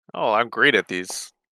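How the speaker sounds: very sarcastic tone. Asked to make a saving throw during the game, answering very sarcastic. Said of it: "a hint of um, sarcasm then?".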